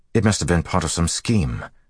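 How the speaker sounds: plain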